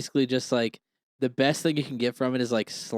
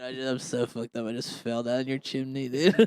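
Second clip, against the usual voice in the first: put-on, drugged-up, stoned voice. Joking that Santa comes down the chimney: acting as a drugged-up Santa. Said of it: "He goes".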